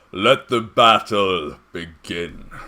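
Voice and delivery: booming, very loud arena announcer call. Game master voicing the Magister opening the arena battle, Magister's booming voice. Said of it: "boom through the arena as he says".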